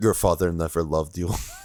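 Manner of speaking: hushed whisper. Player character speaking into a fading little boy's ear, whispering. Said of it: "I just want to whisper in his ear".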